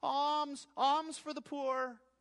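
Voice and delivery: very high, dragged-out, wailing, pleading cry. Describing beggars camped on temple steps: beggars crying out. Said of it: "they will make their cries".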